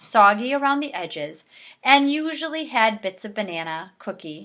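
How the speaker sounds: ordinary delivery, nothing marked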